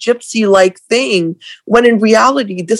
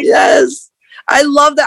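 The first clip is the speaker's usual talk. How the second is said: slow speech carried through laughter; 6 semitones higher than usual. Reacting to another speaker's physics explanation, laughing while talking. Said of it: "I'm laughing because you are a fellow physics nerd".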